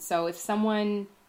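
plain

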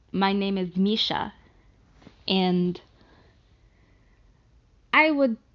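loud, terrible put-on Russian accent. Speaker attempting an accent after doubting they can: terrible Russian accent. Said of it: "do my terrible Russian accent".

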